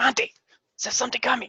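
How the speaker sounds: very high-pitched stage whisper. Reading a story, one character alerts monty, in a loud whisper. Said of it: "gives that like loud whisper".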